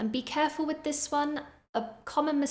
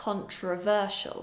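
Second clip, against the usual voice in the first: controversial with the third syllable ver stressed; 2 semitones lower than usual. Pronunciation drill for learners to copy: controversial stressed on third syllable. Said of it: "I'm stressing syllable number three".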